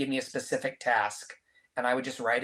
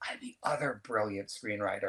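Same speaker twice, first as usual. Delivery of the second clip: soft, hushed whisper; 3 semitones lower, 5 dB quieter than usual. Retelling an elevator meeting, speaker whispers in a woman's ear: retelling a whisper. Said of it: "So I whisper in her ear".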